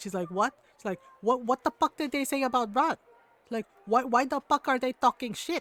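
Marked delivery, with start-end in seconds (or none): 1.2-5.6 put-on loud, furious, outraged rant. Retell how your mom, who loves ron, reacted to talk about him, imitating someone instantly mad. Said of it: "she got instantly mad".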